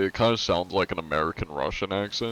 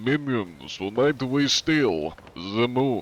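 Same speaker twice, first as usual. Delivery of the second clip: hammed-up, pitched-up cartoon villain accent; 5 semitones higher than usual. A streamer quoting something else the cartoon villain says, in a Gru accent. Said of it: "I wonder if I can do a Guru accent".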